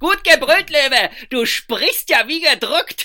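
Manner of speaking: very high, very loud, jeering, laughing yell. Narrator reading the rascals answering the puppet: shouting while laughing. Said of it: "schrien die Lausbuben und bogen sich vor Lachen".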